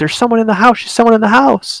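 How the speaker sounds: high-pitched panicked cry, freaking out. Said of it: "started freaking out".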